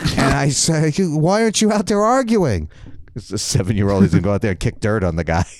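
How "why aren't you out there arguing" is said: furious, angry yell, pitched up high. Retelling storming into the dugout to the old coach, retelling angry yelling. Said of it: "I'm all pissed off and I'm yelling".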